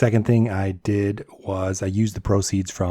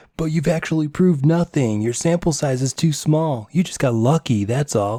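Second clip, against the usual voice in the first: whiny, pitched-up, mocking little voice; 6 semitones higher than usual. Speaker imagines the viewer's objection, mimicking it in a mocking whiny voice. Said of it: "I can hear it in your whiny little voice".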